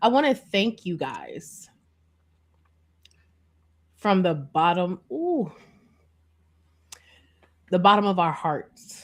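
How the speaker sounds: holding back tears, choking up. Thanking the viewers as the year closes out, holding back tears. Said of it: "I am not gonna cry on this live, but I feel it's happening".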